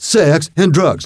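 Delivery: high, preachy, fervent preacher cry. Retelling the same speech again: Jack Valenti preaching like TV evangelist. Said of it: "like a fucking T V evangelist".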